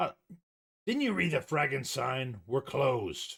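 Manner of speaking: gruff, growled delivery. Narrating a scene, a man answers the arriving visitors: growling. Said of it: "he growls".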